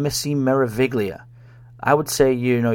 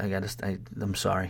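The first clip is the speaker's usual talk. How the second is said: ordinary delivery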